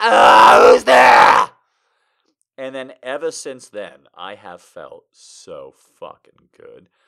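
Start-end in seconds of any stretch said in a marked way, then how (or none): 0.0-1.5 very loud, gruff, rough startled yell. Retelling the shoulder pop again: imitating own startled scream. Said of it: "I was like".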